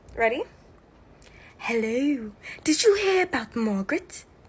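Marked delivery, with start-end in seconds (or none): 1.5-4.2 put-on British accent. In a British accent acting challenge, one partner reads the opening line in a British accent. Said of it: "British accent edition".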